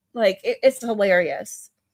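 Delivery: ordinary delivery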